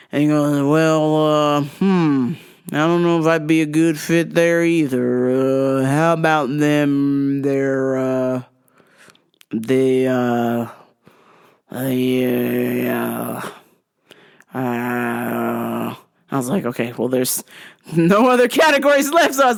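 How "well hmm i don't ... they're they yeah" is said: put-on slurring voice. Retelling an exchange, the speaker imitates a man's reply, slurring his words. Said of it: "he was like slurring his words".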